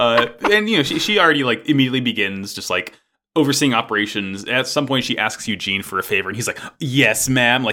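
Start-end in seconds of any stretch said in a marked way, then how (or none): 6.8-7.6 keen, thrilled, eager and excited. Retelling a character's eager answer to a favor: imitating an excited reply. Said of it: "he's very excited".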